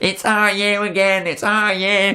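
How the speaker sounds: put-on poor Liverpool Scouse accent. Describing Liverpool fans flocking around, the speaker mimics them in a bad Scouse accent. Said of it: "That was a really bad Scouse accent".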